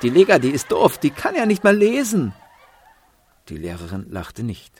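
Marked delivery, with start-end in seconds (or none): 0.0-2.3 very high, shrill, laughing, jeering taunt shout. Other children in class mock lega together: jeering, laughing shout. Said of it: "Sie quietschten und johlten, lachten und riefen".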